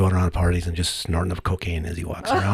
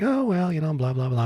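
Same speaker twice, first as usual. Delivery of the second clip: breezy, chummy, matey chatter, pitched up; 8 semitones higher, 6 dB quieter than usual. Imitating how a talk show guest spoke to the host: imitating a chummy tone. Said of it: "She's like".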